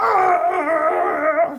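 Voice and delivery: high, loud, freaking-out panicked yelp. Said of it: "his friend is freaking out".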